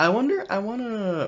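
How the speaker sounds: very high voice breaking up and cracking. Speaker discussing a show's budget: voice cracking. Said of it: "that was a bit of a voice crack there".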